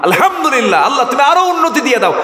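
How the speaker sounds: high, fast, joyful and admiring voice.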